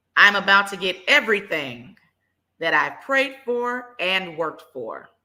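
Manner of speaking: confident, assured chest voice. Leading affirmations, showing how to say the last one: said with confidence. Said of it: "say this last one with a little confidence".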